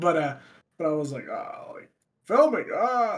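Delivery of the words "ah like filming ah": high, slow, drawn-out silly voice. Retelling the reply again, redoing the Kermit Obama impression. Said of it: "That's not how it sounded".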